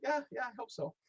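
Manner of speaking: voice shooting very high, squeaky. Retelling asking whether a book would sell, the speaker reenacts his voice going high. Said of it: "My voice went a little high".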